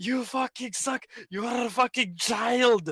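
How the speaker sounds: acted, furious, high, angry yelling. Retelling a gaming friend getting mad at lag: imitating someone yelling angrily. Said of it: "you yelling at me".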